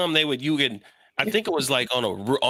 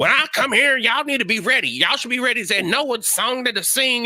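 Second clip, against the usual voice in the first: mock arrogant old-school preacher voice, higher; 9 semitones higher, 3 dB louder than usual. Mocking old-school pastors with egos: imitating an egotistical old-school pastor. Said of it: "older ones, and they're assholes. Where they're like".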